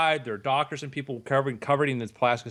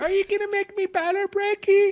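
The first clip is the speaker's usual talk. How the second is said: put-on very high-pitched voice of a twelve-year-old girl; 4 dB louder than usual. Playing a twelve-year-old girl asking if she'll get better: acting as a twelve-year-old girl. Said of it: "There's a twelve-year-old girl".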